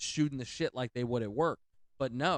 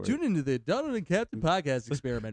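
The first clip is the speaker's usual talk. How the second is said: goofy, loud, swooping made-up silly character voice; 3 semitones higher, 5 dB louder than usual. Saying a podcast intro line in a made-up voice: put-on silly voice. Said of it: "the voice you just did".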